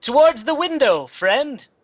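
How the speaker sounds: high, loud yelling in a put-on voice. A player voicing his character during a tabletop role-play scene, in-character yell. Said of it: "And he'll yell".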